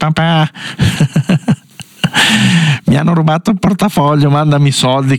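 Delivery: mock young man's voice, high-pitched and fast.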